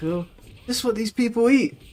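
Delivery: put-on Greek accent with a very high voice. Recalling a woman in Cyprus looking at American food, imitating her Greek accent. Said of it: "in her Greek accent".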